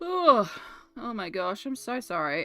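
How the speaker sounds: speech distorted by a yawn. Apologizing after drifting off topic, yawning while talking. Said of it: "I can't stop yawning".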